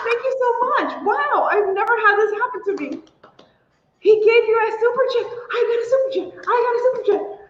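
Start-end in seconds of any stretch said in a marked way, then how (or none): 0.1-0.9 very high, choked-up, teary, emotional. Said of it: "I'm gonna get emotional".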